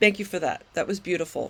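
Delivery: speaking while openly crying, tearful. Thanking a speaker after a moving share, crying while talking. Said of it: "And I'm crying again".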